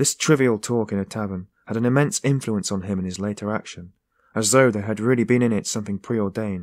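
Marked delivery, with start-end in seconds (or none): none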